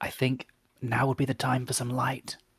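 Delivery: hushed whisper. Exploring a close, echoey place with the others, asking for light: whispering. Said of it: "I'm trying to whisper here".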